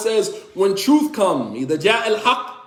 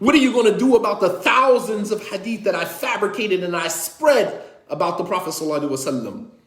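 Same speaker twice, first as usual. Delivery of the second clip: ordinary talk, nothing marked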